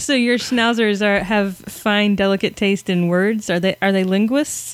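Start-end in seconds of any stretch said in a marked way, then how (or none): none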